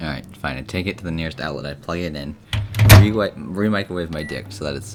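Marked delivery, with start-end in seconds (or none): none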